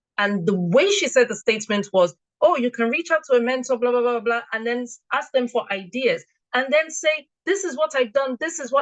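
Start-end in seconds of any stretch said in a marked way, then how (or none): none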